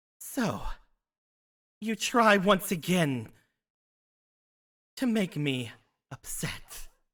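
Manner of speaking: very ragged, loud voice. Game master voicing an unseen presence tied to a cloth artifact, ragged voice. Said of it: "You hear a very ragged voice".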